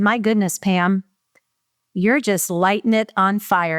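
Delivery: very heavily sarcastic tone. Retelling a boss's remark on sales success: imitating boss's sarcastic tone. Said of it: "he's doing it in a very sarcastic way".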